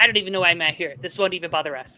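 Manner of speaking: put-on irritated official voice. Retelling what the health minister in Quebec said at a meeting: imitating an irritated official. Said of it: "He got really irritated, and he's like".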